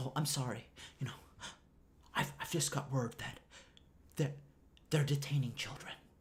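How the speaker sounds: hushed, breathy, fake crying voice. Mocking a media report on detained children: imitating Rachel Maddow fake crying. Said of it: "pretending to cry".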